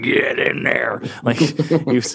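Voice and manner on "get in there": rough, rasping, creaky voice. Joking about who in the U S government backed a war: Dick Cheney impression. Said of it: "that was Dick Cheney you just did".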